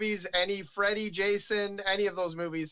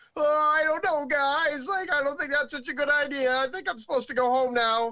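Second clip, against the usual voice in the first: timid, scaredy-cat voice, pitched up; 6 semitones higher, 4 dB louder than usual. Retelling his reply when friends invited him to the woods: imitating his scaredy-cat younger self. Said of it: "totally the scaredy cat guy".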